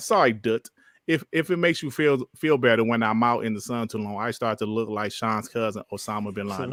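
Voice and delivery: ordinary talk, nothing marked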